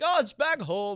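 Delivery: very loud, high, slow put-on leprechaun Irish brogue. Joking about going back to italy, the speaker tries a mock leprechaun voice. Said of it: "I should talk like that".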